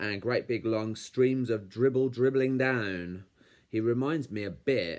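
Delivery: plain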